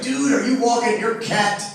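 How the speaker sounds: plain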